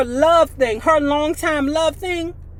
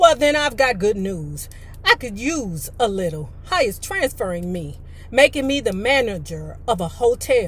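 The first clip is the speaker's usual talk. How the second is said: ordinary delivery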